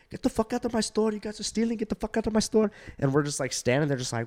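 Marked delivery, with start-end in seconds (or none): 0.1-2.7 put-on very high, angry screaming outburst.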